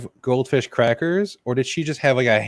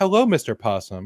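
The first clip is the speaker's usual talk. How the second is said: normal talking voice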